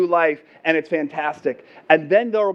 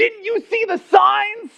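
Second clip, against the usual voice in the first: shrill, very high yelling; 3 dB louder than usual. Retelling how the angry landowner shouted a question: imitating a yelling landowner. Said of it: "And she was yelling. She's yelling".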